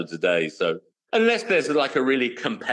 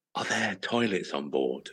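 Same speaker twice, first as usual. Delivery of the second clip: very quiet and hushed, lower; 4 semitones lower, 7 dB quieter than usual. Retelling a question to the check-in lady, done to make a partner laugh: very quiet. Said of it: "I really quietly say to the lady".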